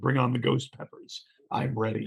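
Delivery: normal talking voice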